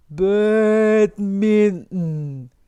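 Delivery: very slow, stretched-tape drawl like warped tape. Pronunciation lesson showing how americans say a word: very slow, like stretched tape. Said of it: "테이프 늘어진 것처럼 천천히".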